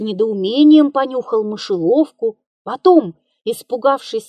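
ordinary delivery

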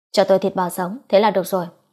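plain

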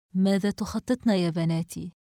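plain reading voice

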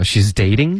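she's dating with a rise at the end of dating. Quoting how she said it as a question, rising question intonation. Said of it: "而且她还说的是一个疑问句的一个语音语调".

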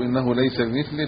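normal talking voice

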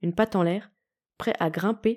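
plain reading voice

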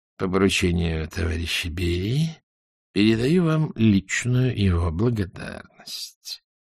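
low, quiet, creaky delivery. A visiting general, not smiling or offering his hand, passes on thanks, creaked out. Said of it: "проскрипел".

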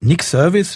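pitch rising as if asking. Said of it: "lässt er nicht locker".

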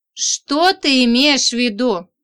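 enraged, furious tone. The narrator answers her friend's scornful remark, enraged. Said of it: "рассвирепела я".

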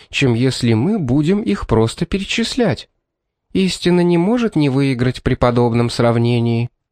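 plain reading voice

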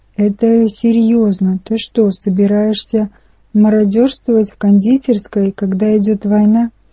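usual speaking voice

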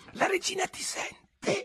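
scared stiff, barely voiced, frightened whisper. Narrator reads the rabbit's question to Alice, a terrified whisper. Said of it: "Pispigliò il coniglio terrorizzato".

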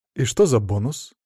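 ordinary delivery

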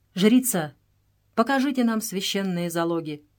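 usual speaking voice

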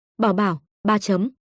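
plain reading voice

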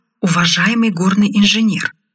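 ordinary delivery

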